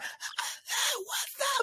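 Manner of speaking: forced, hoarse, strained, breathy near-whisper. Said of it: "I was forcing myself to talk".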